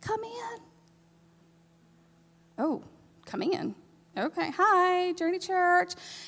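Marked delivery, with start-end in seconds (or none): 0.0-3.8 frail, feeble, weak, soft, high little call. Knocking on a door and retelling the reply heard, imitating a really weak voice. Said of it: "I hear a really weak".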